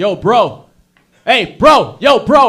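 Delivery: menacing tough-guy voice, very loud, very slow. Imitating a guy in Toronto calling out on the street: imitating a tough Toronto guy. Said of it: "some guy's like".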